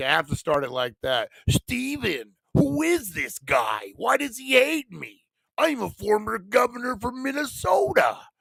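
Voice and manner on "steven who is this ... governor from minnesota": very high pitch, swooping wildly up and down. Riffing on a caller said to be with Jesse Ventura: Jesse Ventura impression. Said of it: "I'm doing an impersonation of him".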